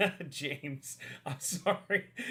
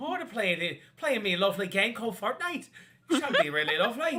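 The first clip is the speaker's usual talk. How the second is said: put-on Irish accent; 3 semitones higher, 4 dB louder than usual. Talking about playing Fortnite, in a put-on Irish accent. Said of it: "that was good actually".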